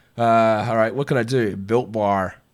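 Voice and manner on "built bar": clumsy, bad put-on American accent. Trying an accent on a product name, asking listeners, bad American accent. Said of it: "is that a bad American accent?".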